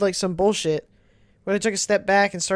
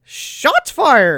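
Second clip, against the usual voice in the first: loud, shouted cartoon voice; 7 dB louder than usual. Doing a requested voice from a list of voices: Team Four Star Krillin voice. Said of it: "do it".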